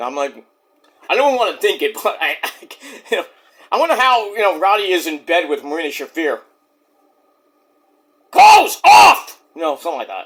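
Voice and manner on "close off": shrill, very high, full-volume yelling. Imagining Roddy in bed with Marina Shafir, the speaker acts it out, imitating Roddy yelling. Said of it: "he's yelling".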